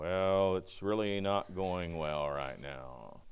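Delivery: very low, hushed, gloomy mutter. Speaker describing how Eeyore answers a cheerful greeting, in an Eeyore voice. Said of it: "And Eeyore, he will crash the mood".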